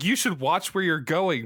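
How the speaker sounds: plain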